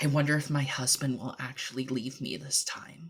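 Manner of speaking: hushed half-whisper under the breath, barely there. Voicing a mannequin's words as a player touches it: half-whisper. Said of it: "and out loud in a whisper".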